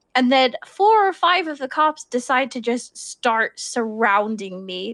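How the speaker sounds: ordinary talk, nothing marked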